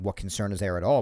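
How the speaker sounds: ordinary talk, nothing marked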